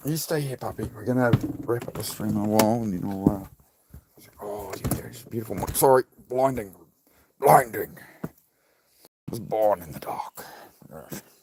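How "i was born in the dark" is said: covered, quieter British villain voice. On stream, a speaker shows how to do a villain: Bane voice. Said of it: "That's how you do the Bane".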